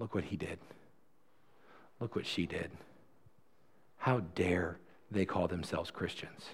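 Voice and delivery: very soft, very quiet whisper. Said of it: "Satan is no longer in his ear whispering".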